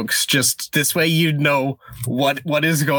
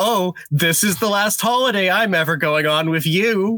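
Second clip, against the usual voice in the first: acted-out sarcastic tone, pitched up; 5 semitones higher than usual. Recapping a story's wife character, mock-sarcastic wife quote. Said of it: "the wife is just like sarcastically like".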